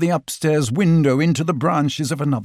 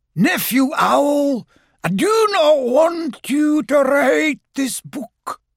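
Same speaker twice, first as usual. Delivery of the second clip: very high, eerie, ghostly voice; 11 semitones higher than usual. Reading a story, a voice from the chimney speaks to Owl: ghostly Uncle Robert voice. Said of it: "a ghostly voice".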